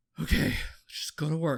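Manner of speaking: plain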